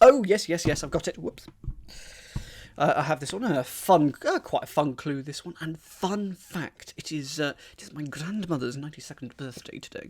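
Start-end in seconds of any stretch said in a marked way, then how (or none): 7.7-10.1 very soft, very quiet, hushed whispered words. Mentioning their grandmother's ninety-second birthday, speaking quietly. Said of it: "I don't know why I'm speaking quietly".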